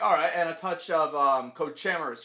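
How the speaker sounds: ordinary talk, nothing marked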